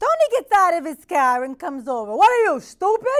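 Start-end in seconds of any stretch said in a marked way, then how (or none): 2.1-3.2 very high-pitched, shrill, angry shouting yell. Retelling a minor car accident, quoting the other driver: imitating Tony yelling. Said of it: "He yells at me".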